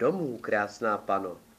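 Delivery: plain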